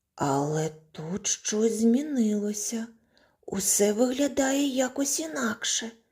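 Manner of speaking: shy, hesitant, timid, high, rising voice. In a fairy tale, the dwarf Tikhonya speaks on entering the dwarfs' house: timid. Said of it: "промовив несміливо Тихоня".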